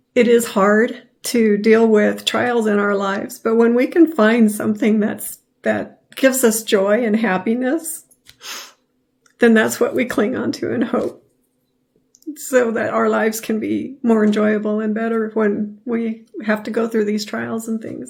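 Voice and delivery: speaking through tears, emotional. A speaker closes a heartfelt message to listeners, emotional and crying. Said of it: "I apologize for getting emotional and crying".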